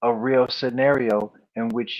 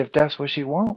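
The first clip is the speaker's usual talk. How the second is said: put-on guileless, naive, innocent, childlike tone; 3 semitones higher than usual. Retelling how Bishop Don Magic Wand answered: imitating an innocent, childlike tone. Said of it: "He said it like an innocent child".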